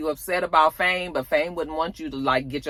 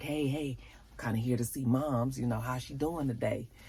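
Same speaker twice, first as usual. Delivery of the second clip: hushed, very quiet half-whisper; 3 semitones lower, 10 dB quieter than usual. Retelling a character asking a nurse how his mother is: imitating a half-whisper. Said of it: "whispering to the nurse".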